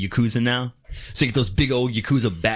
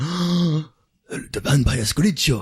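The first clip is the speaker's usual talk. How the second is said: put-on Japanese accent, higher; 4 semitones higher than usual. Retelling how captors react to hearing his name, in a mock Japanese accent. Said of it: "Why am I speaking Japanese?".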